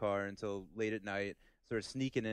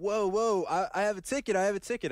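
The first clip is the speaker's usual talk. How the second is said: frantic, panicked, very high, loud screaming; 11 semitones higher, 7 dB louder than usual. Retelling being shoved by a man demanding a ticket, re-enacting own screaming. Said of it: "I'm screaming".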